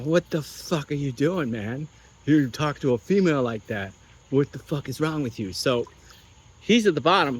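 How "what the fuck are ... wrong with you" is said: play-acted, heated, angry scolding tell-off. Telling a story, the speaker recalls going downstairs to confront a huge man: retelling angry scolding. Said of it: "I start bitching".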